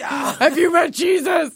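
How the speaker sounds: imitated put-on scary deep voice. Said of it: "You sound scary".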